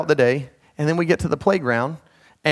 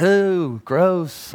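put-on old-time comedy bratty kid voice; 3 semitones higher than usual. Reacting to someone waiting for a nod, doing a Little Rascals impersonation. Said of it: "my best Little Rascals impersonation".

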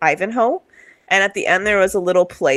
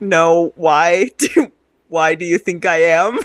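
put-on ashamed tone, slower. Speaker recalls role-playing a reply to a prying question, acting out being ashamed. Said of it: "I acted out kind of being ashamed".

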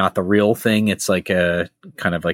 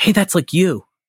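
put-on very high little-kid voice; 10 semitones higher than usual. Retelling what Evelyn whispered during a movie: Evelyn's little kid way. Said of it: "in such a, like, little kid way".

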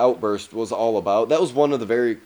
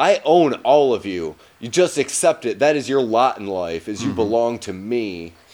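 usual speaking voice

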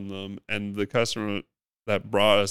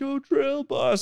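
put-on, very high-pitched street holler. Retelling how people in the city called out: imitating people yelling. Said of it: "people were yelling at me".

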